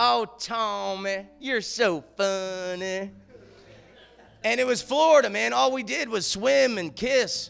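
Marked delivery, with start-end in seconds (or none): 0.0-3.1 very slow, dripping, syrupy southern drawl. Remembering his happiest day, the speaker quotes a girl who moved from Texas: Marla Coleman's syrupy southern accent. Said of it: "she had the most syrupy southern accent".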